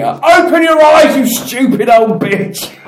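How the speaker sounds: put-on very high, very loud, shrill, drawn-out scream. Retelling being knocked over by an old woman this morning, reenacting a scream. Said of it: "I just like started screaming".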